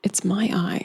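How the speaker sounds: whispering under the breath. In a role-play scene, a player's character speaks after promising to stay out of it: whispering under breath. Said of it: "I'm just kind of whispering to myself under my breath".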